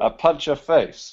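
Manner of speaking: put-on Belarusian-accented English. Playing another person for a minute, speaker tries out a Belarusian accent. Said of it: "I'll try my Belarusian accent".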